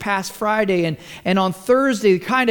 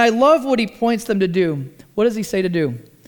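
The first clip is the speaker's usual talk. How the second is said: usual speaking voice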